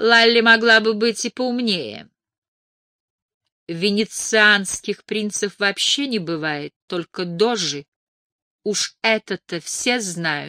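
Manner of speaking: disdainful, sniffy, scornful, contemptuous scoff. A dinner guest dismisses another woman's story, contemptuous snort. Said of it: "презрительно фыркнула Силия Рид".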